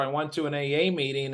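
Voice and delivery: ordinary talk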